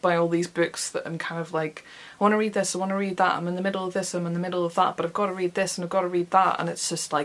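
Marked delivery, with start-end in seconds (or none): none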